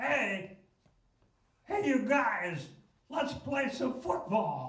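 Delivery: very high, drawn-out put-on kid voice. Doing an embarrassing impression of a kid from the speaker's hometown. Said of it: "I used to do impressions ... I would do this one. ... It's a kid from my hometown".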